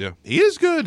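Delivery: voice rising to a high pitch. Discussing a player's game tape, voice going high. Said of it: "My voice got high".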